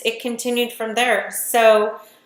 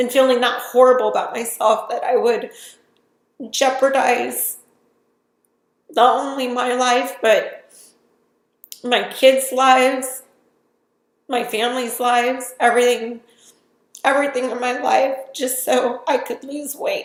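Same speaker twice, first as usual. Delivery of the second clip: tearful voice, crying while talking. Sharing a painful personal story on video, crying while talking. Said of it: "even though I'm crying and I'm upset".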